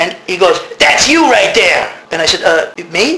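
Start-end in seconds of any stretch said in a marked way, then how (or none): 0.8-1.9 put-on American vernacular dialect accent.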